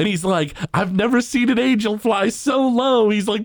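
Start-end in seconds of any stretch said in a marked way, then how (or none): 0.7-3.1 high-pitched, play-acted, hammed-up flirtatious voice. Retelling a cartoon scene where Bart flirts with a woman: Bart hamming it up. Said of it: "like ham it up to her".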